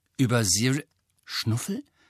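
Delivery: ordinary delivery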